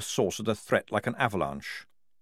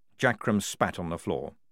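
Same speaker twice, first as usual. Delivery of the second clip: usual speaking voice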